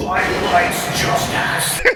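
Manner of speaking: light, heraldic, proclaiming calling voice. A game player casts a spell to amplify their voice: booming magically loud voice. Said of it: "make my voice really loud".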